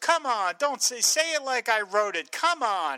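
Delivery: irritated, angry, slow, high-pitched, words drawn out. Retelling a tv scene where a character scolds the announcer: imitating someone getting mad. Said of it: "And he gets mad".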